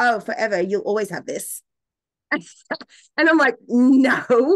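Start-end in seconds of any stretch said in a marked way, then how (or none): 0.0-1.6 acted-out, completely serious, flat, matter-of-fact deadpan voice. Retelling how she answered the speaker's question, imitating a deadpan reply. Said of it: "She looked at me deadpan in the face, completely serious".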